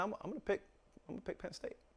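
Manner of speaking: hushed, reluctant, quiet delivery.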